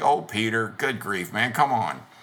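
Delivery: put-on playful, joking teasing tone. Retelling how Jesus teased Peter about his faith, retelling a joking tease. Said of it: "jokingly teases him".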